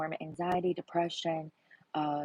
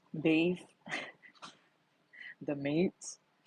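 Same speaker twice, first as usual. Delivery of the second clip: put-on commercial announcer voiceover voice. Imitating a commercial while checking the audience can hear: Arby's announcer voice. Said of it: "I'm trying to sound like Arby's".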